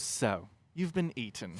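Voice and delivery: very quiet, hushed, slow British narrator voice. Imagining a video's voiceover after something bad happens: British voiceover voice. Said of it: "a British voice goes".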